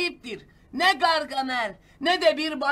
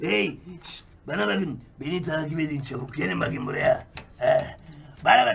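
very low, swooping, sly, scheming villain voice; 11 semitones lower than usual. Gargamel urges the others to follow him: sneaky Gargamel villain voice.

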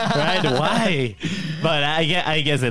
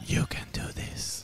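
eerie, creepy, very soft ASMR-style whisper. Recording a loop for listeners to sleep to, speaking in a creepy voice. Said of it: "That's a creepy voice".

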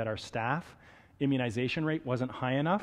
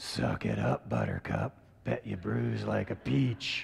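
gruff, rough voice with swooping pitch; 3 semitones lower than usual. Answering someone who asks if the flu shot hurts, Batman voice. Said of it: "then I'd talk like this".

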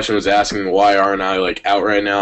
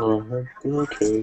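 put-on bashful tone, quieter; 8 dB quieter than usual. Picturing the listener's dad yelling at them, acting out their reply: imitating a bashful reply.

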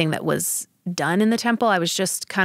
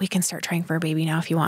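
hushed, soft stage whisper; 4 dB quieter than usual. Retelling a husband leaning over to speak in her ear: imitating a half-whisper. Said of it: "he leaned over and whispered in my ear".

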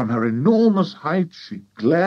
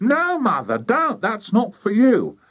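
high-pitched, cried-out voice; 9 semitones higher than usual. Reading Mrs. Cranky speaking to her mother, crying out. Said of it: "cried Mrs. Cranky".

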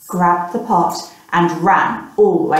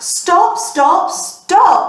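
high-pitched repeated yelling; 12 semitones higher than usual. Reading a children's story aloud, the boy's cry to the porridge pot; yelling. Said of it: "he yelled".

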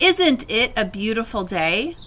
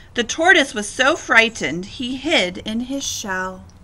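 ordinary delivery

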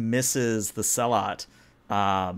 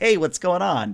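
play-acted, high-pitched, eager, overjoyed dog voice; 7 semitones higher, 3 dB louder than usual. Giving a dog analogy, voicing a dog greeting someone: excited dog voice. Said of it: "the dog comes over all excited".

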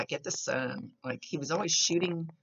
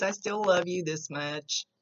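playful, put-on comical tone; 3 semitones higher than usual. Relaying to the listener what he says about loving them, in a funny way. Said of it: "he's saying it in a funny way".

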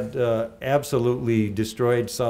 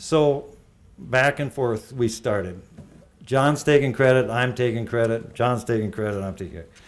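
usual speaking voice

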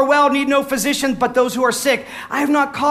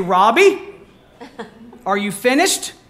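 preacher voice, slow, deliberate, scolding, halting; 4 semitones lower than usual. Retelling how a pastor stopped preaching at a child talking in church: imitating Brother Rose. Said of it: "And he would say".

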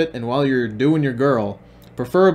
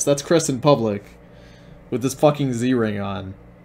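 plain

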